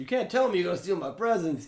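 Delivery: high, loud berating tone. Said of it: "it goes from berate".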